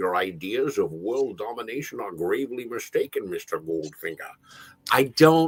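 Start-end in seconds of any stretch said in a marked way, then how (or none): 0.0-4.3 put-on lisping movie-star voice, much quieter. Trying out an impression with a line to Mister Goldfinger, use a Sean Connery lisp. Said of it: "leaning into the Sean lisp".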